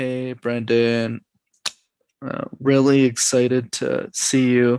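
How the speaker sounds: unexcited, low-energy tone. Showing how an introvert greets someone on a podcast, flat, unexcited greeting. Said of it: "But the opposite is also true".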